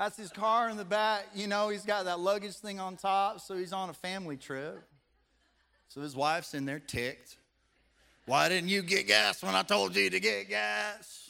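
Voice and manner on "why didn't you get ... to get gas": raised, creaky, raspy smoker's voice, annoyed. Acting out the wife in the car scolding her husband: put-on smoker's voice. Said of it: "smokes a little too much if she talks like that".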